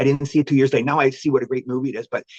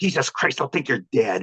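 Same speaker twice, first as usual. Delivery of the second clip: put-on angry muttering through gritted teeth. Retelling his dad's habitual reaction: imitating his dad through gritted teeth. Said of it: "My dad would grit his teeth and he'd say".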